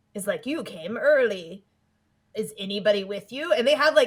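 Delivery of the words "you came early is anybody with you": slow, sinister, creepy delivery. Retelling what a character says to Molly at the mall: imitating a creepy line. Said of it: "the creepiest conversation".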